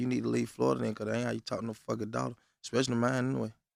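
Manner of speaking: plain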